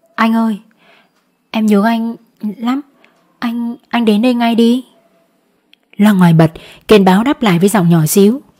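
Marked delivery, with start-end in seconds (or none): 0.2-4.8 faintly quavering, slightly trembling, pleading voice. A woman phones a man and asks him to come right away, in a slightly trembling voice. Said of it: "Lệ nói với giọng hơi run".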